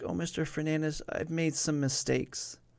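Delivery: put-on sobbing voice. Retelling what a distressed girl said to him, imitating someone sobbing. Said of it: "And she starts sobbing".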